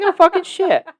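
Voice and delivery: high-pitched, loud, exasperated snap.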